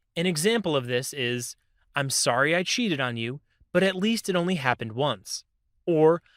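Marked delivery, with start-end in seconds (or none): none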